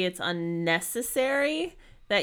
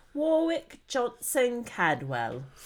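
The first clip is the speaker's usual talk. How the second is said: British-accented delivery, put-on, pitched up; 5 semitones higher than usual. Saying a name that seems to call for it: british accent. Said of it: "I feel like that's a name you have to say with a British accent".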